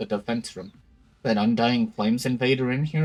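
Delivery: ordinary delivery, nothing marked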